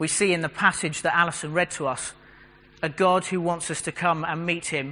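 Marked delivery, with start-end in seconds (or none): none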